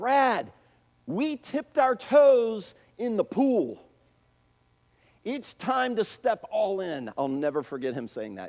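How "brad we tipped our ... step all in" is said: very slow, drawn-out, pitched-up called-out yell. Retelling what the instructor yelled out in front of everybody: retelling a yell. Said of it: "he yells".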